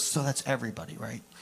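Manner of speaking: quiet, sarcastic, snarky little aside. Retelling a friend's aside at a conference: imitating a snarky remark. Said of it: "this kind of snarky friend".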